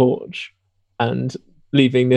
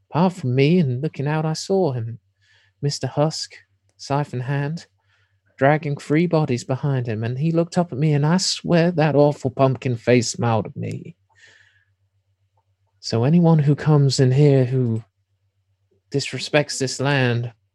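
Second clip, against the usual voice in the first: put-on elderly woman's voice. Voicing the old lady as she answers the players' questions: old lady voice. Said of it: "the old lady".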